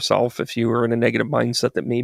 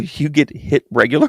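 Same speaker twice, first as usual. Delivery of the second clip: laughing while speaking, higher; 3 semitones higher, 4 dB louder than usual. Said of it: "I just started laughing".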